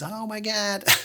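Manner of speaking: put-on high-pitched Southern accent exclamation. Retelling a woman's reaction after she reached out about an audition, imitating Hannah's Southern accent. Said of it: "Sorry, that accent".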